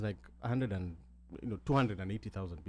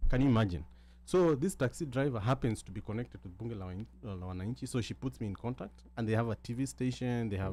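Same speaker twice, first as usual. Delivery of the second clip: ordinary delivery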